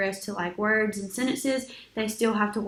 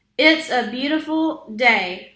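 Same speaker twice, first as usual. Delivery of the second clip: pushed up a notch, a bit louder; 3 semitones higher, 8 dB louder than usual. Repeating a therapy sentence on request, a little louder. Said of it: "make it just a little bit louder".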